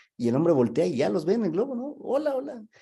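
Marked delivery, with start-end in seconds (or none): 2.0-2.6 very high, shouted call. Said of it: "le empiezan a gritar".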